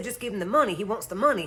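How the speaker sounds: plain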